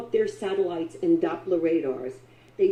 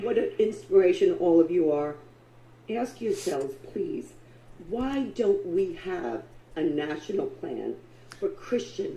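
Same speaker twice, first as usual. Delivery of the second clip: voice quavering, shaking and trembling all through. Speaking to a group of listeners: shaking voice. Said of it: "The voice is shaking and everything".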